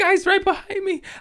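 put-on very high, little baby-like kid voice. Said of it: "his little baby voice".

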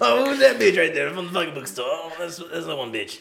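hollered out good and loud. Imitating Uncle Robbie to mock the other speaker: imitating Uncle Robbie. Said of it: "You sound like my fucking, like my Uncle Robbie".

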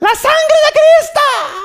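shrill, loud, long, very high screaming cry. Telling a story about a woman coming down, retelling her scream. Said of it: "She starts screaming".

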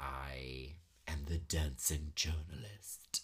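put-on low, whispered, husky older woman's voice.

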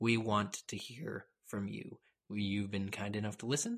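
hushed whisper. A host addressing the listeners directly, whispering. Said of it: "Why are we whispering".

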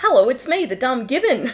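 put-on dopey, loud gibbon voice in strong Australian accent. Retelling the dumb gibbon's lines, the speaker does a high-pitched australian gibbon voice. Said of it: "It was very high-pitched and very Australian".

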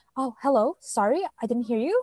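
polite front-desk customer-service voice. Imitating how a woman answers the phone, in Ale's polite customer-service voice. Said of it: "she actually has a customer service voice. She goes like".

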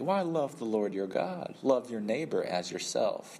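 dry, mildly sarcastic delivery. Retelling the parable, the law expert answers Jesus; imitating a sarcastic reply. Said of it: "the expert answers kind of sarcastically".

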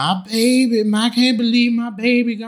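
acted, very high, drawn-out sobbing, screaming wail. Describing a funeral, acting out the mother: imitating crying and screaming. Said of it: "mama crying and screaming".

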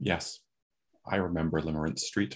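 low, soft, exact, very precise, carefully enunciated voice. Voicing a character who looks down at the listener, in a very precise voice. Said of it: "just says in a very precise voice".

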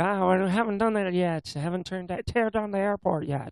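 bad, put-on Newfoundland accent. Retelling someone's reply about tearing down the airport, bad Newfoundland accent. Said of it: "my bad representation of a Newfoundland accent".

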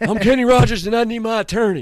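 very high-pitched, loud yell at full blast. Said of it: "[name] [name] impression bit".

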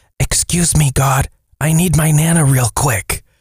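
put-on whisper in a child's voice. Reading a grandmother's note about her grandson in church: imitating a child whispering. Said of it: "he whispers".

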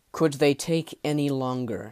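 ordinary delivery, nothing marked

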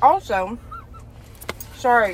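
muffled speech through a mouthful of food. Speaker apologizes mid-conversation, talking with mouth full. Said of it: "I have a mouthful of".

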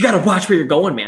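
mock cocky, self-assured delivery. Retelling what a cyclist said while pedaling past the speaker, mock-cocky retelling. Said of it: "with a little cocky fucking laugh".

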